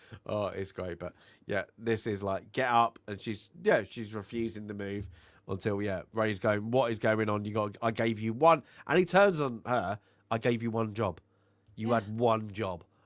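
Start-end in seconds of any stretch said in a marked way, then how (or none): 10.3-12.8 mock, nasty, scolding tone. Retelling how he turned on her, imitating a nasty scolding. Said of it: "And he just turns nasty".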